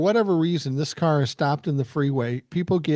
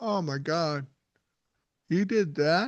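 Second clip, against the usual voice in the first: slow, feigned astonishment and shock; 3 semitones higher, 4 dB quieter than usual. Retelling reacting to the sons' stories: retelling feigned shock. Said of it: "I'd have to feign shock".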